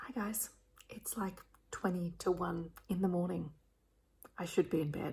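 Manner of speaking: soft, hushed whisper, like a quiet aside. Alone late at night, greeting viewers while whispering. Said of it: "I don't know why I'm whispering".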